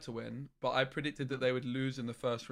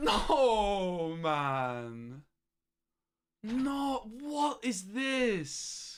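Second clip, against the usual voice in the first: exasperated, frustrated, pitched-up groan, no drawn out; 8 semitones higher, 4 dB louder than usual. Watching a tournament match, reacting as the team loses: frustrated. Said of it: "This is so frustrating".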